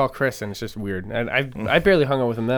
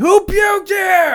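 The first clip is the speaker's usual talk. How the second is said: shrill, very high, very loud shout; 10 dB louder than usual. Retelling yelling to everyone up on the balcony: imitating own past yelling. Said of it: "and I'm just yelling".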